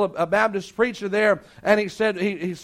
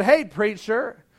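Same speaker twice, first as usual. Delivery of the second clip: heavily sarcastic, dripping-with-sarcasm delivery. Retelling how a girl on the street greeted a preacher, mock-sarcastic greeting. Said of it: "real sarcastic like".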